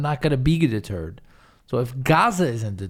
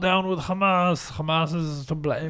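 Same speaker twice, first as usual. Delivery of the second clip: put-on German-Russian accent; 4 semitones higher than usual. Mimicking protesters in videos friends are sharing, in a German Russian accent. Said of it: "I'm making like a German Russian accent".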